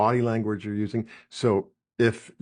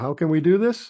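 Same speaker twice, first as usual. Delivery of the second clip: rising lift at the end on "this"; 7 semitones higher than usual. Showing someone taking themselves down a little: rise at the end on this. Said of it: "you go up at the end like that".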